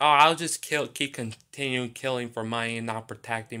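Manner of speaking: plain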